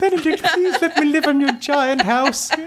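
put-on very high, pleading young boy voice. Retelling turning up at a house to record: imitating own orphan boy voice. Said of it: "like an orphan boy".

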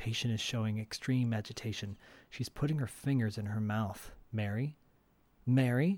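hushed voice. Retell the doctor noting his patient's agitation after mary starts crying, a little quieter. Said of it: "he gets a little quieter".

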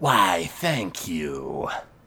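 very low, soft, hushed serpentine hissing voice. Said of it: "Galnar sort of hisses".

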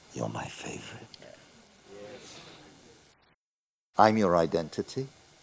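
soft, very hushed, barely audible whisper. Acting out how God answers a nervous moment: whispering as God. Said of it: "God whispers".

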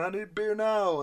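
mock high, slow, drawn-out yell into a mic. Retelling how a man yelled into the microphone, acting out the yell. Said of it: "he yells into the microphone".

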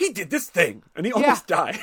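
put-on stuffy British accent. Speaker quoting someone's perfect flustered delivery: mock-disapproving British voice. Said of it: "he's a little disproving of it".

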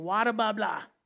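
thick, strong put-on Boston accent. Quoting a woman talking to the speaker and Sarah, thick Boston accent. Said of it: "her Boston accent is so strong".

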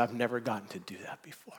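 put-on weeping and rejoicing. Retelling what he said to the speaker: imitating weeping and rejoicing. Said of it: "as he's weeping and rejoicing and jumping".

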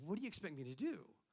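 put-on slightly sarcastic tone. Retelling a reply given months before the speaker's wedding, re-enacting a little sarcasm. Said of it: "you could sense just a little sarcasm in my response".

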